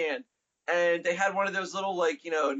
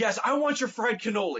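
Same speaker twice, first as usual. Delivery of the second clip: eager, over-keen, bursting, enthusiastic delivery; 4 semitones higher than usual. Retelling ordering a fried cannoli: imitating own enthusiastic order. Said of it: "such enthusiasm in my voice".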